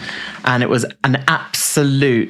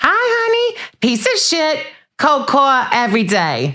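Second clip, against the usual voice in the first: put-on voice pitched very high. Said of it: "no, that's Teresa".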